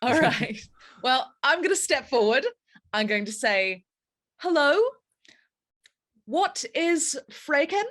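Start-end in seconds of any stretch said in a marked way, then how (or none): 4.4-7.8 exaggerated, over-the-top rising pitch through Freyken. Player in a tabletop game stepping forward to greet a character, exaggerated questioning inflection. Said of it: "inflect it like a question as much as I can, like exaggerated".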